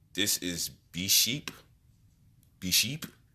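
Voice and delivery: accent from Haiti. Joking around on a podcast, switching into a Haitian accent. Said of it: "In my Haitian accent".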